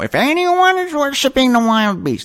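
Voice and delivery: very high, stern scolding tone. Reading a verse like the speaker's grade-school nun principal: mock scolding voice. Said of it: "it's a scolding type of voice".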